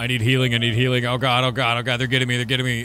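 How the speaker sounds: mild, toned-down yelling. Describing a PVP game where a player calls for healing: imitating someone screaming. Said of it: "and you're screaming".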